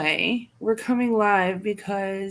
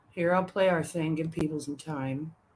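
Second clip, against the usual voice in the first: exhausted, worn-out voice, low, tired murmur; 4 semitones lower, 8 dB quieter than usual. Getting ready to play something for listeners, in a tired voice. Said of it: "I sound like I'm so tired".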